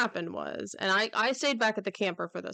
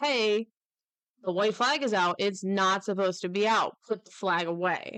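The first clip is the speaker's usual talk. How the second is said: ordinary talk, nothing marked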